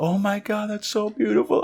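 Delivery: crying, very high-pitched tearful gush. Retelling her reaction to his news: imitating someone crying. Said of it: "then she just starts crying".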